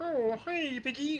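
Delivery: high-pitched frog puppet voice. Explaining how puppeteers work, quoting Kermit greeting Piggy: Kermit the Frog voice. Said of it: "Kermit, right? He'd be like".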